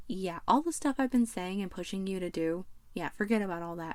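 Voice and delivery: ordinary talk, nothing marked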